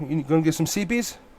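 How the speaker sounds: put-on very soft, hushed baby talk. Retelling how they talk to their tired dog: imitating own baby talk. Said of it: "Because I baby talk him".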